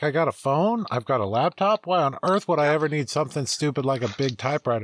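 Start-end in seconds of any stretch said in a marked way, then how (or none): none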